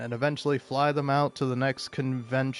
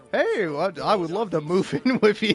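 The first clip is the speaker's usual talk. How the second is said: pitched-up voice, talking through laughter; 6 semitones higher, 3 dB louder than usual. Quoting a streamer's line while telling a story, laughing while talking. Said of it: "Sorry, I'm laughing about it".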